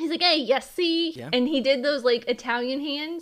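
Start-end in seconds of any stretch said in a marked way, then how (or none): 0.2-1.1 loud, high, put-on Brooklyn wise-guy accent. Describing how a crab character talked, in a brooklyn gangster voice. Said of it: "he talked like a Brooklyn gangster".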